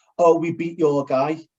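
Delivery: plain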